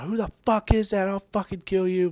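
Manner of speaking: very high, shrill, raging drill sergeant yell. Retelling how the drill instructor reacted: imitating drill instructor screaming. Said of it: "He got the D I voice again".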